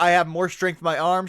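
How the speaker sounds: normal talking voice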